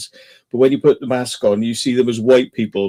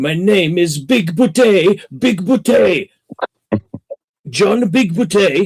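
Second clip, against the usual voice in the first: put-on higher pitch, strong Italian accent; 8 semitones higher, 3 dB louder than usual. Describing a cult film, quoting the alien John Lithgow plays introducing himself, John Lithgow's Italian-accented alien. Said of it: "he's got an Italian accent, and he's like".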